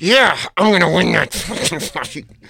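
words pushed through gritted teeth. Demonstrating how a line was delivered, talking through teeth. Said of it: "the line through my teeth".

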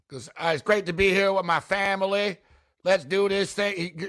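exaggerated put-on Southern accent. Mocking his appearance at an LSU basketball game, do Brian Kelly's fake Southern accent. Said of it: "Guy starts talking in a Southern accent".

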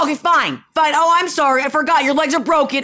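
put-on exasperated yelling, a little sarcastic, half-scream. Retelling what was said to a daughter at the beach: imitating herself screaming. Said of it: "screaming at her a little bit".

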